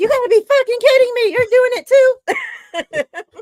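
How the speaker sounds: very loud, very high, drawn-out shriek. Retelling a reaction to a dropped pass: imitating someone screaming. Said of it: "I was screaming".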